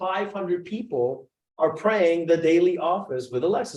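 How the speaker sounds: ordinary talk, nothing marked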